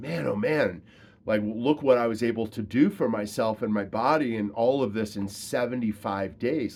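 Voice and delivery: ordinary talk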